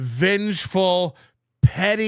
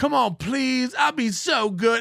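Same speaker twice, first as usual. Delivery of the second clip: mock pleading, higher pitch; 5 semitones higher than usual. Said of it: "I want him to come in and beg me".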